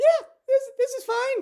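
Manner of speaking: very high, breezy, cheerful chirpy voice. Imitating a show character's reply during an apocalyptic event, mock-cheerful high-pitched voice. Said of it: "with a high pitched voice".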